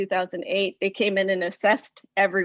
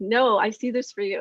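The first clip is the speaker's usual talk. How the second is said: ordinary delivery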